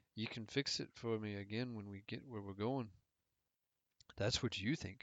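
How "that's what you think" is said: icy, cold, dismissive tone. Narrator voicing her reply to him as she squirms away, said coldly. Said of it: "I said coldly".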